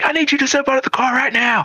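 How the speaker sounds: very high-pitched, loud shouting. Retelling being stopped in the car, the speaker quotes the corporal, retelling a yell. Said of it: "he starts yelling".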